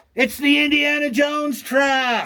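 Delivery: put-on kid voice, high, loud, drawn-out yell. Retelling what an eight-year-old on a field trip yelled: imitating a kid yelling. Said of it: "he yells out".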